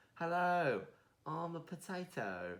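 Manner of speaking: put-on very high, slow, drawn-out, cute British kid voice. Imitating the little potatoes from a kids' show: Small Potato British kid voice. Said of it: "cute little British kid voices".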